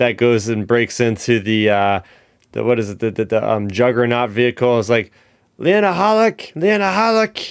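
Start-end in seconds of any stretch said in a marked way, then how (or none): 5.6-7.5 put-on approximate Scottish accent, pitched higher. Retelling a Rogue One scene, quoting Melshi: Scottish accent. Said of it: "in the Scottish accent or whatever".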